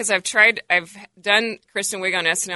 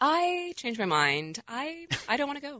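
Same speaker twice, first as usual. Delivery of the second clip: put-on, high, nervous and frightened voice; 6 semitones higher, 8 dB quieter than usual. Retelling an audition bit, imitating her about to go skydiving, scared. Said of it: "I did this bit about her".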